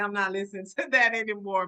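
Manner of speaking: ordinary talk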